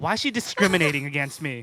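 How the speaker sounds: mock angry voice, put-on anger. Imagining the neighbor's complaint: imitating a mad neighbor. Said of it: "He was probably mad".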